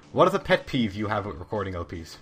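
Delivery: normal talking voice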